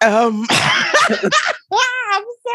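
high, slow speech with helpless, uncontrollable laughter. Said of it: "I can't stop laughing".

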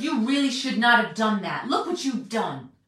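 loud, stern and reproachful scolding tone. Showing how a scolding might have sounded: mock stern voice. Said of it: "talk to her in a stern voice like".

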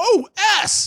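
sudden, loud, high-pitched put-on swear, like a yelp. Imagining cursing right before a car crash, retelling a loud curse. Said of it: "really loud".

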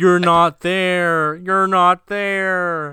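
very loud, very high-pitched screaming. Describing a hallucinating game character yelling at a radio, imitating him screaming. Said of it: "He starts screaming".

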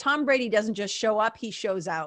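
ordinary talk, nothing marked

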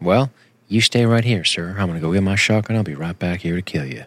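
mock calm, quiet, matter-of-fact fury. Acting out how a farmer threatens someone, with mock quiet farmer rage. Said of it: "Just a quiet it, kind of rage, a farmer rage. Very matter of fact".

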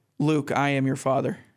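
ordinary talk

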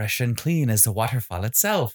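put-on Irish accent, commercial announcer voiceover. Recalling the old Irish Spring commercials: Irish Spring commercial voice. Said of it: "in an Irish voice he said".

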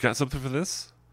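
timid, scared tone.

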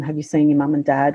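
ordinary delivery

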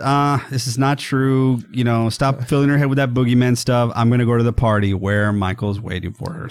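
normal talking voice

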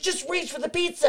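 very high-pitched, frantic, panicked coaxing tone. Retelling a pizza handoff at a dock, imitating someone panicking. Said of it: "he's panicking".

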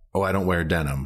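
plain

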